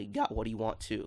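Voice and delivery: soft voice, cracking and breaking mid-line. Speaker recapping a cartoon fight and one fighter's point, voice cracking. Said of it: "Did my voice just crack?".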